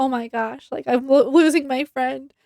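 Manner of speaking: put-on mock-tearful crying voice. Retelling how Lily reacted to her friend's situation, imitating Lily crying. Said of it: "Lily starts crying like".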